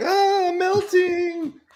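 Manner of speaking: high-pitched wail that fades away. Imitating a squirming congressman as a melting Wicked Witch cry. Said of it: "like pouring water over, like, the Wicked Witch".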